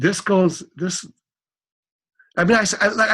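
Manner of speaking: stuttering, tripping over words, voice lifted. Telling listeners about a discovery that amazes him, stuttering. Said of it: "I know I'm kind of stuttering".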